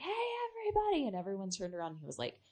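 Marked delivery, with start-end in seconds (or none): 0.0-1.1 mock full-lunged yell, very high. Recalling the guy who lived there standing on the bar, retelling a top-of-lungs yell. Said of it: "he like yelled at the top of his lungs".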